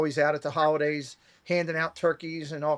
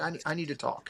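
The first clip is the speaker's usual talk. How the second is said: soft, troubled, worried voice; 8 dB quieter than usual. Retelling a friend's phone call, imitating Kelly's troubled tone. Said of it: "talking in a tone of voice that I'm thinking something's wrong".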